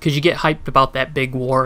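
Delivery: plain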